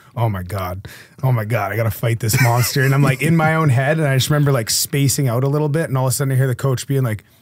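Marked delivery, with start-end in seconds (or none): 0.2-2.9 mock near-panic, panicked inner voice. Retelling sitting in the dressing room before a fight: imitating own panic. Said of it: "panicking almost".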